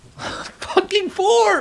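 frustrated yell, very high, drawn-out wail.

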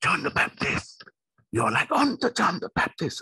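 very high shrill shout. A preacher retells how a woman of God in Croydon shouted at them, retelling her shout. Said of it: "started to shout".

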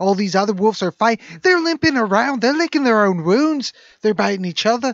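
loud Liverpool accent. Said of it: "I just went into Beatles for no reason".

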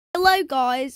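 put-on British accent. Greeting viewers at the start of a video, in a put-on british accent. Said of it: "sorry I had my British accent on".

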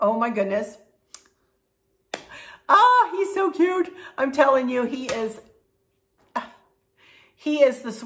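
choking up, fighting back tears. Telling viewers about a little boy: fighting back tears. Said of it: "I'm not gonna cry".

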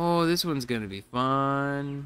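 completely sarcastic, slow and dragged out. Commenting on a tricky placement task: complete sarcasm. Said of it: "Say it with complete sarcasm".

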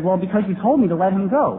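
plain

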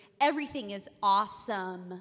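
exaggerated, odd Valley girl voice with words over-pronounced. Describing how Dan does an American accent: imitating Dan's Valley girl voice. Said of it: "he does like this weird Valley girl voice".

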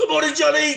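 high, loud screaming. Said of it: "and screaming".

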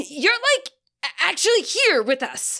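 startled, high-pitched cry at painfully loud volume. Narrator reads a man who leapt back on noticing someone, in a painfully loud voice. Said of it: "he cried in a painfully loud voice".

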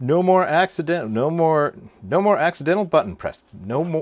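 very loud, high, joking Southern gentleman drawl. Finishing a grip tape repair, in a joking southern gentleman voice. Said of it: "Why do I sound like a southern gentleman".

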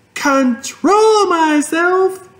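very high, shrill shouted yell. Narrating a story, a character answers her father, yelling. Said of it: "yelled Fern".

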